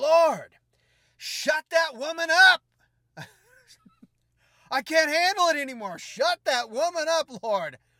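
very high, very loud, shrill, sudden outburst. Retelling how a man suddenly couldn't take it anymore; retelling a sudden outburst. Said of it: "all of a sudden he just bursts out".

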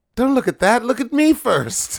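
really squeaky voice, very high and loud. Retelling a movie scene where Zeus speaks from the shield: squeaky high-pitched Zeus voice. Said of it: "in this really squeaky, kind of, like, high-pitched voice".

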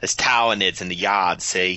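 Boston-accented speech. Demonstrating how a name is pronounced, in a Boston accent. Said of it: "kind of with a Boston accent".

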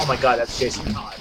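normal talking voice

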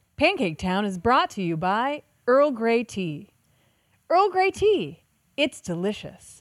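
sing-song ad announcer marketing voice. Pretending to read a podcast advertisement: marketing voice. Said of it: "isn't that a good marketing voice?".

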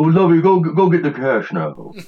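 put-on posh rich old man voice. Describing the old rich man on Gilligan's Island, the speaker does a Thurston Howell impression. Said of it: "he talked like this".

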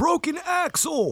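very high, shrill yelling scream. Retelling a guy in a truck yelling at the speaker's car: retelling a guy screaming. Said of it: "a guy in a truck screams".

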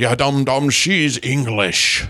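put-on voice with a Scottish accent. Calling out commenters on Facebook as Sean Connery: Sean Connery voice. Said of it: "Sean, you're calling the dum-dums out?".

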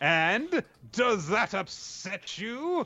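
very high, very slow, drawn-out sinister villainous taunt. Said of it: "Urara looks all evil while saying".

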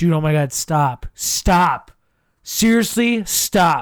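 slow, mock-annoyed, pleading tone. Retelling a friend's reply to many texts arriving at once: imitating Jimmy mad. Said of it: "he's mad".

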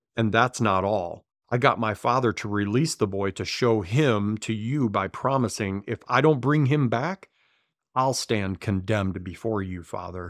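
ordinary talk

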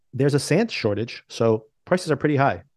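ordinary delivery

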